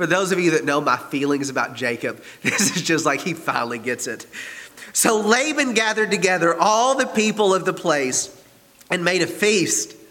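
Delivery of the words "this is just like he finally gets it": giggling, laughing voice throughout. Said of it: "I can't read without laughing".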